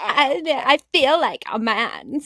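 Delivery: put-on, very slow, heavy vocal fry. Imitating the Karen the speakers discuss: imitating a Karen's vocal fry. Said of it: "like the vocal fry".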